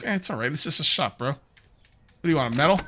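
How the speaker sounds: casual, relaxed everyday voice. Voicing the customers who walk into the shop: voicing the shop customers. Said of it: "They're like".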